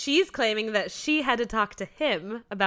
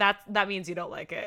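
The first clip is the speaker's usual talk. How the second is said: ordinary delivery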